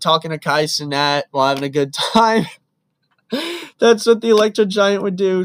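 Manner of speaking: talking through laughter between the words. Imagining what a game character would do, laughing while talking. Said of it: "I'm laughing so much".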